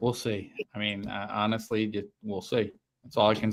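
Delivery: very low, level, flat monotone voice. Asked by a co-host for thoughts on Dart, answering in a monotone. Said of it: "You were so monotone with that answer".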